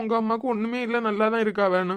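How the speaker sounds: ordinary delivery, nothing marked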